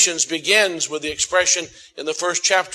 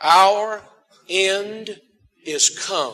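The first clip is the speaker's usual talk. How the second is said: slow, unhurried delivery; 3 semitones higher than usual. Leading listeners in repeating a bible phrase together, saying it slowly. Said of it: "Let's say it slowly".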